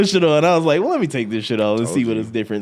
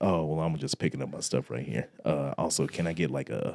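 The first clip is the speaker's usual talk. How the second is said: sultry, seductive, flirty, come-hither voice; 9 semitones lower, 12 dB quieter than usual. Retelling ordering at the counter, imitating own seductive voice. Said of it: "Don't try to talk to us in a seductive voice".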